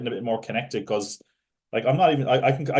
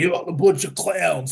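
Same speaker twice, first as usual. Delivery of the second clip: over-the-top, gruff tough-guy voice; 6 semitones higher, 3 dB louder than usual. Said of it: "he was like".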